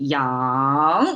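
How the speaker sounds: yang said with Chinese rising tone. Explaining yin and yang as chinese say it: rising tone on yang. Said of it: "yang is how Chinese pronounce it, and it's a rising tone".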